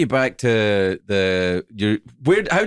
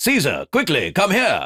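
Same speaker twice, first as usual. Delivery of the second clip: put-on old-film style, swooping posh British accent; 3 semitones higher than usual. Mocking how ancient Romans talk in movies, a movie ancient Roman British accent. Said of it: "all ancient Romans talked like this".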